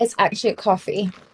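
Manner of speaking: attempted, put-on, faux British accent. Asked what she is drinking, the speaker replies in an attempted British accent. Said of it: "not me trying to pull out my British um accent".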